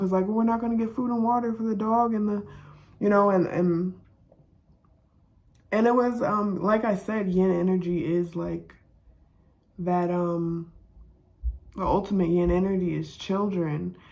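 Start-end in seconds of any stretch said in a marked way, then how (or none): 0.3-2.5 put-on high, fast, panicked little boy voice. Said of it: "freaking out".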